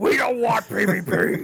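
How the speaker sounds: high, slow bellowing character voice.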